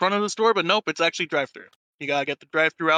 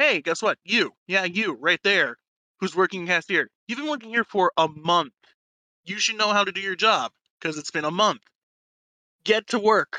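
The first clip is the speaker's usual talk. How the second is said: imitated angry scolding voice; 2 semitones higher than usual. Retelling the manager turning to the cashier: imitating an angry manager. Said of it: "angrily shouted at everyone".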